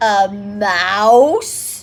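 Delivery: loud, resonant, disbelieving, with mouse drawn out. Reading a character's reply to hearing of a lady mouse, sonorous and unbelieving. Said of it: "The sonorous voice sounded unbelieving".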